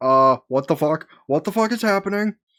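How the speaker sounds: play-acted, alarmed, frantic exclamation, rising high. Voicing a father who sees what is happening: acting panicked. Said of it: "And start panicking".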